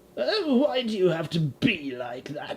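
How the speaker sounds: put-on supervillain voice. Acting a skit, calling out to Batman: Joker voice.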